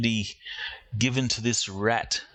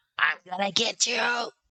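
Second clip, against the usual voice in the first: very high, squeaky rat-man voice; 11 semitones higher than usual. Game narrator voicing the rat man as he comes to his senses, rat voice. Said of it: "in that rat tone".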